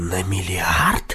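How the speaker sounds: low voice, horror barely held in, stifled. Marcel repeats the other man's words, stifling horror. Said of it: "подавил восклицание ужаса".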